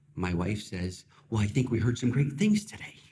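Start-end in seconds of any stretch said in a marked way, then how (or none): 1.3-2.9 cheerful, upbeat, bright happy voice. An upset husband retells what his wife said after an appointment, imitating wife's happy voice. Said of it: "And then in a happy voice".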